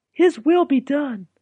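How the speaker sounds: peaceful, serene, very high-pitched. A mother camel answers her husband's whisper while walking home, quiet reply. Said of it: "Mama Camel responded quietly".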